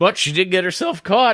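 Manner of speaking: high voice breaking and cracking mid-line. Speaker discusses a woman's growth with co-hosts, voice cracking. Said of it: "My voice cracked there".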